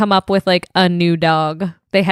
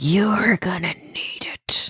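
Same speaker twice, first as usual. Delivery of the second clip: mock menacing, slow, breathy, threatening sinister whisper; 7 dB quieter than usual. Quoting a character's line to the others: imitating a sinister delivery. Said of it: "I love how sinister he sounds".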